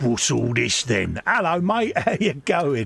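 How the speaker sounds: put-on young orc voice. Storyteller voicing the orc boys as a Space Marine boards their ship, orc voice. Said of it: "Fester's doing his Orc voice again".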